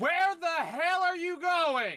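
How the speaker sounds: very high, thunderous, booming magic voice. A character using Thaumaturgy to call out: magically booming voice. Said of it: "Thaumaturgy booming voice".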